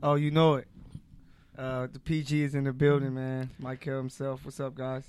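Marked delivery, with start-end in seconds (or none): 1.9-5.0 soft, sad, downcast, low-energy delivery. Introducing himself to the listeners at the start of the show: sounding sad. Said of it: "Sounds so sad saying that".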